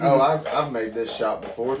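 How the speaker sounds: ordinary delivery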